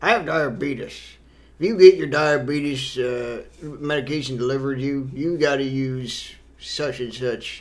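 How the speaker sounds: put-on soft elderly old-man voice. Recalling an old man from a tv commercial, imitating an old man's voice. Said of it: "He was like this old guy that would talk about his".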